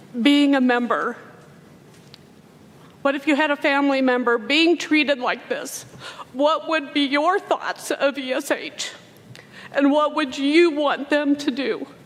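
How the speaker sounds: tearful, on the verge of crying. Describing how their group of employees was treated, the speaker is on the verge of crying. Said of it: "I'm gonna cry".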